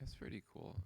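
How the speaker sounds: low-energy, flat, unenthusiastic voice. Reacting to another player's game move, low-energy voice. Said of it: "I can't summon the energy in my voice".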